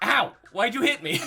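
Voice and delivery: very high, very loud, shrill, hurt, pained tone. Voicing a character just slapped by a player: Randy hurt and complaining. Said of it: "I'm gonna bitch slap him".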